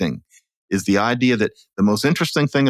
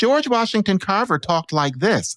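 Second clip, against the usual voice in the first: very high soprano speaking voice; 10 semitones higher than usual. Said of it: "he had a soprano voice".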